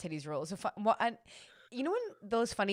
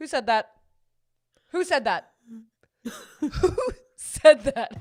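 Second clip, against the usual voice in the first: very loud, high, demanding shout; 7 semitones higher, 11 dB louder than usual. Retelling how the principal at an assembly demanded who said it: imitating the principal. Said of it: "the principal comes on with the microphone. He goes".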